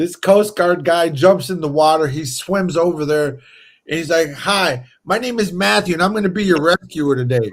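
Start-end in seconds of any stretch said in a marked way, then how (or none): 4.3-7.5 chipper, cheery, upbeat voice. Retelling how a Coast Guard rescuer introduced himself in huge waves, imitating chipper Matthew. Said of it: "This dude is like chipper".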